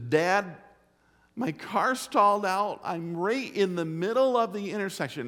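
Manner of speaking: put-on high-pitched, tearful crying voice. Retelling a daughter's phone call from a stalled car, imitating her crying. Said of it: "and she's crying".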